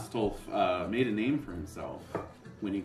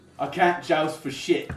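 put-on British knight accent; 8 semitones higher, 8 dB louder than usual. Voicing a worried knight confessing to the players: stereotyped British knight accent. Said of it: "the French stereotype of what a British knight would be".

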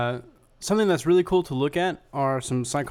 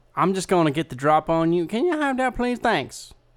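put-on dim-witted hillbilly voice, stock idiot voice; 3 semitones higher than usual. Playing a scene with the other hosts, speaking in a redneck criminal voice. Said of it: "Why am I suddenly, like, redneck criminal?".

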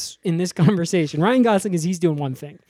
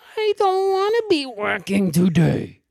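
babyish, sing-song, childlike put-on little-kid voice; 3 semitones higher than usual. Showing character number two, a psycho, in a childlike baby voice. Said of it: "psycho with a baby voice".

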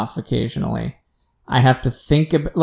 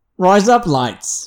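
put-on Australian accent, pitched up; 5 semitones higher than usual. Trying the phrase in an australian accent after being pushed. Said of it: "there was an accent in the middle there".

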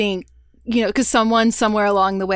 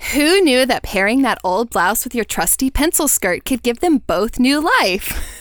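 put-on California valley girl accent; 3 semitones higher than usual. Reading out a listed tip about old clothes, in a Valley Girl voice. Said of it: "I feel like I have to read it like a Valley Girl".

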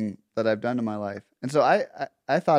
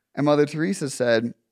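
ordinary talk, nothing marked

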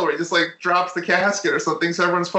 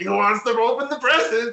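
high, bad put-on Cajun accent; 5 semitones higher than usual. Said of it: "I don't know why he's Cajun".

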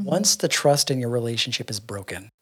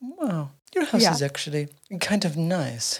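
put-on refined old-film accent, high pitch, slow pace; 5 semitones higher than usual. Imitating a woman who finds everything dirty, in Audrey Hepburn type accent. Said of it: "Like in like an Aubrey Hepburn type of accent".

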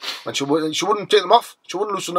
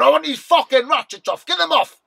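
very high, shrill yelled shout; 9 semitones higher than usual. Retelling being in pain in the cells: imitating his own shouting. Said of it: "because I was shooting like that".

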